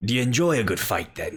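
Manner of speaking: swashbuckling, piratey voice, hailing. Voicing a sun-weathered man greeting a player: piratey voice. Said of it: "even in the tone of his voice".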